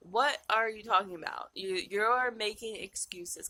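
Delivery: put-on firm, authoritative, commanding voice. Retelling an inner voice scolding about excuses: imitating an authoritative inner voice. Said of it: "authoritative voice takes over my head and was like".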